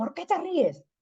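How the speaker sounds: high, indignant delivery.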